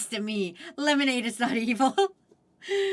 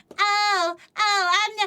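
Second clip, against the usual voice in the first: mocking put-on voice, pitched higher; 7 semitones higher, 3 dB louder than usual. Imitating Noella denying allergies, impression of Noella. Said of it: "this is my impression of Noella".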